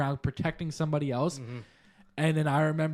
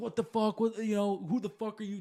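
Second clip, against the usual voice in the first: mock light, high, mild yelled outburst; 5 semitones higher than usual. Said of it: "start yelling, like, 'What the fuck?'".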